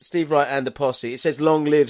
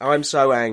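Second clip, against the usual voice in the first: ordinary talk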